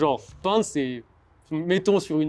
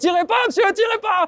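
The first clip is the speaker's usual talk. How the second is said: very high, loud, panicked, acted-out pleading shout; 5 dB louder than usual. Retelling his friend running from someone threatening to shoot, retelling a friend's shout. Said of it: "en criant".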